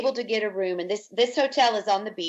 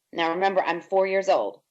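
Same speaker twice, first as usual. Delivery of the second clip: usual speaking voice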